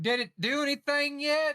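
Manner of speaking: very high, loud, drawn-out yell. Calling out in character to someone no longer in the same room: yelling as loud as possible. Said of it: "I'm yelling as loud as I can".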